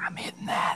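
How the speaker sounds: very soft, hushed, breathy whisper. Telling everyone something while the woman stands right there, whispering. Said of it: "why'd you have to whisper though".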